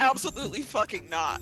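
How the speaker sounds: blunt, flat-out tone. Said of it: "Walt is like".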